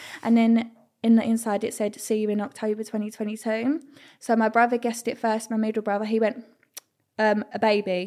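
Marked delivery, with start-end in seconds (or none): none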